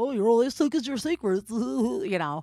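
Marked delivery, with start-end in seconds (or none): 0.0-1.5 very derpy, dopey, goofy voice, high and loud. Showing how friends read sober cliches to each other: imitating a derpy voice. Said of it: "the most derpy voice".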